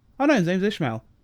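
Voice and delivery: normal talking voice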